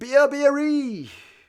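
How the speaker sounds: very high, thrilled commentator-style excited shout. Retelling a try being scored, the speaker gives a mock-excited Nugent shout. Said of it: "Nugent got all excited".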